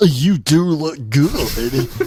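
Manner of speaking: very slow, over-the-top cowboy drawl. Retelling a Dairy Queen commercial: imitating an over-the-top cowboy. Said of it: "over the top, like, cowboy-ish".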